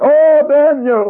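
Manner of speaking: sorrowful, mournful, lamenting voice. Storyteller voicing the king calling to Daniel in the morning, in a lamentable voice. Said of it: "has a lamentable voice".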